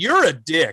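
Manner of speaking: ordinary talk, nothing marked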